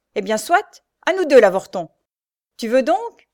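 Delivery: loud, raging, bellowing yell. A man advances on the knife-grinder, shouting. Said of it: "marchait sur lui en hurlant".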